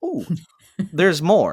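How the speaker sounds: swooping, hyped infomercial pitchman voice. Imagining how multi-pass sellers might talk, infomercial pitchman voice. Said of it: "like an infomercial".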